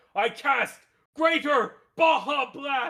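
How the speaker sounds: very loud, high, drawn-out chanting shout. A narrator voices Magius pointing his wand at Diamond Hook, Magius shouting a spell. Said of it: "point his wand and shout".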